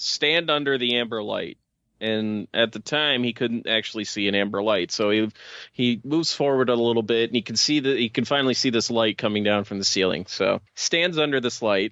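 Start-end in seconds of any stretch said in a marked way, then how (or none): none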